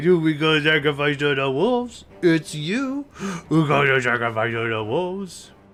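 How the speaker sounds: put-on cutesy, happy little chattering voice. Retelling what the speaker often says to their parents' dog, in a put-on cute happy voice. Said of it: "in a cute little happy voice".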